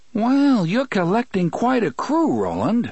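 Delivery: very high, wry, swooping, bitterly amused sing-song. Eddie remarks to Roland as a pair of hands scoop things into a purse, bitterly amused. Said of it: "bitterly amused".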